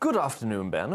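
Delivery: put-on British English accent in announcer style. Reading a viewer's message aloud to Ben: BBC accent. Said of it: "giving you a, um, a, a B B C accent".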